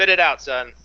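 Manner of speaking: a little annoyed, mildly irritated voice. Voicing a smith to someone who has lingered at his shop, a little annoyed. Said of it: "turns around a little bit annoyed".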